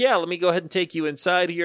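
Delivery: mock enthusiastic, keyed-up, excited, eager. Retelling the dude showing up at the front door: imitating someone all excited. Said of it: "all excited".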